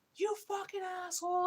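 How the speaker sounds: put-on very high-pitched, shrill yelling. Retelling being trapped in a dark freezer by a coworker: retelling yelling at a coworker. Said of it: "and I'd be yelling at him".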